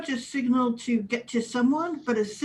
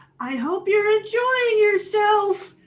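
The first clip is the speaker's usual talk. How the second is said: very high shout that keeps climbing; 10 semitones higher, 6 dB louder than usual. Voicing a character who is running from a chasing replicant: yelling in character. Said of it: "and she yells".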